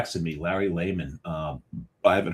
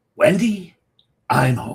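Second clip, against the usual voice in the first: very loud, unsettling, creepy, pitched-up voice; 8 semitones higher, 9 dB louder than usual. Redo the impression you did in front of a friend that creeped him out: creepy impression. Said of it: "creeped him out because I went".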